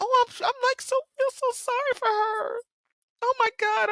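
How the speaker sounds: very high, tearful speech broken by sobs. Talking to viewers about a woman she feels sorry for, crying while talking. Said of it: "I'm really crying".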